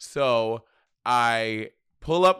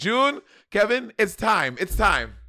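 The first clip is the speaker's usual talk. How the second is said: put-on very high old woman voice, called out; 10 semitones higher than usual. Telling a story, the speaker voices his grandmother calling June, Rafiki-like grandma impression. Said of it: "make your grandma sound like".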